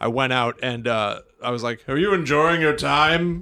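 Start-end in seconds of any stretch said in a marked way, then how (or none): 1.9-3.4 TV news-anchor delivery. Retelling asking diners a question, Will Ferrell voice. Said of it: "I sound like Will Ferrell".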